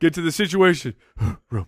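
put-on announcer voice, rushed, winded, running out of air. Mocking another speaker's segment announcement: imitating someone out of breath. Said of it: "It's like you ran out of breath".

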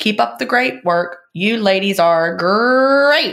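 "great" dragged out like a cereal mascot. Reading the closing lines of a letter aloud: Tony the Tiger voice. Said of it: "like Tony the Tiger, so I had to say it that way".

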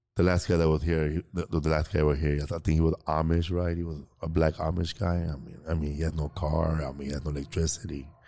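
mock deadpan monotone. Speaker recreating how he used to deliver his jokes, retelling his deadpan monotone jokes. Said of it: "Very monotone".

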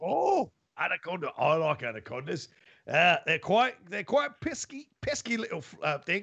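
slight put-on Australian accent. Playing a train conductor who admits slipping into it: slight put-on Australian accent. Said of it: "I'm slightly in my Australian".

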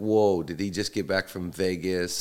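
normal talking voice

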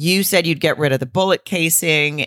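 ordinary talk, nothing marked

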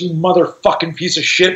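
put-on muttering in a boy's voice. Retelling what a humiliated 15-year-old muttered after being tripped, imitating muttering. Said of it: "he's muttering to his mouth".

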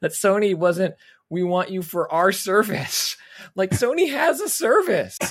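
high voice, words breaking through laughter. Discussing a news story, the speaker laughs at their own next point, laughing while talking. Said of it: "I'm laughing at what I'm going to say".

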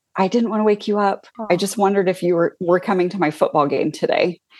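mimicked whispering. Retelling what a young neighbor said at the door: imitating a whisper. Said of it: "And he whispers".

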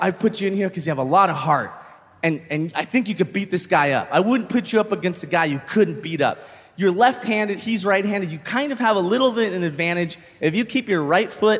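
ordinary talk

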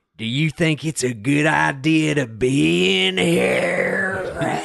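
rough, creaky voice with be stretched long. Showing the others how his father asked that question, imitating his father. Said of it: "I'll do a real one".

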